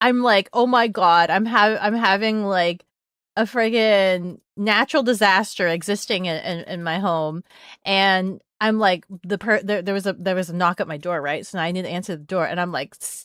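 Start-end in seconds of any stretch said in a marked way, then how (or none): none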